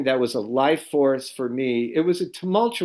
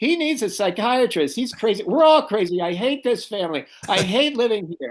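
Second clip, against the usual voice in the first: put-on scream, higher; 8 semitones higher than usual. Retelling how a sister started screaming at the family: imitating sister screaming.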